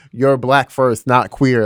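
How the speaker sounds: ordinary talk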